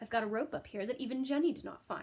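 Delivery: plain reading voice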